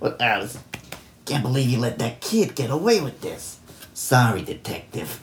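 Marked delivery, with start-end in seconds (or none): 1.2-3.6 put-on tough-guy New York mobster accent. Showing the voice he kept doing: New York gangster voice. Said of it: "my New York gangster voice".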